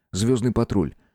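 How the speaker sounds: plain reading voice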